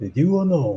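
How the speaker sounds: small, put-on Japanese accent. Retelling a friend's bit that cracked everyone up: imitating Mike's Japanese accent. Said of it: "Japanese accent where he's like".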